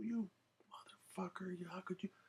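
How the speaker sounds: put-on furious ranting. Retelling a stolen bike, the speaker acts out a woman flipping out. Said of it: "she flipped out".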